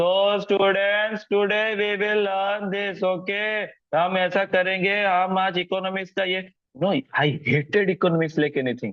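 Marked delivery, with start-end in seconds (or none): 0.4-6.5 acted slow, sleepy, droning, pitched-up teacher voice. Imitating a teacher addressing students at the start of class, drowsy teacher voice. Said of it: "उनका बातचीत करने का तरीका भी कुछ ऐसा था / बातचीत करने का तरीका ड्राउजी".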